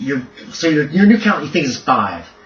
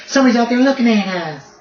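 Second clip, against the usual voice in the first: put-on very high, babyish voice with a thick southern accent; 10 semitones higher than usual. Voicing a giant heard in the darkness: baby voice with heavy southern accent. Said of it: "like a little baby. With a real heavy-duty southern accent".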